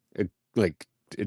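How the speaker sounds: normal talking voice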